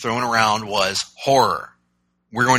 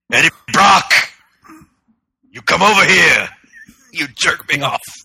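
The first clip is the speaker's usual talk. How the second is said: loud, high, belted put-on character voice; 6 semitones higher, 6 dB louder than usual. Showing the voice you would have preferred for Venom in the movie, the Barbarian voice. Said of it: "the Barbarian voice being used for Venom".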